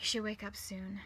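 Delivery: plain reading voice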